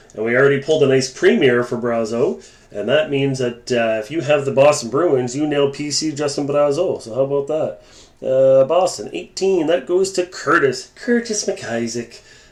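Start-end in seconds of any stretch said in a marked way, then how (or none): 10.9-12.2 bad fake Irish accent, laid on thick. Reading out a card name during a break: bad Irish accent. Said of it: "the bad Irish accent on".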